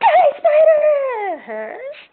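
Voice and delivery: very high, swooping, shrieking terrified panic scream. Voicing a character waking from a nightmare, swinging an axe: screaming in terror. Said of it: "So it'll sound something like this".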